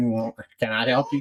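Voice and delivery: put-on gum-chewing voice. Describing the lady at the Indian Hospital: imitating her chewing gum. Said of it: "that lady chewing her gum".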